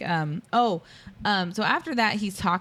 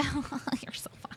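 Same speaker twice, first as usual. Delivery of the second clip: high, whispered, simpering fake amusement. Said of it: "she just keeps acting like".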